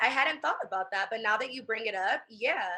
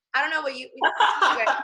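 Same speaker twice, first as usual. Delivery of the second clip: ordinary delivery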